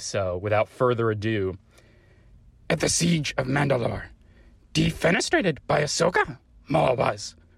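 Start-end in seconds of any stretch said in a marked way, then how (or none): 2.7-7.3 pitched-up, croaking voice. Saying a line in a voicemail after announcing it: Yoda voice. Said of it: "you needed to hear it in Yoda's voice".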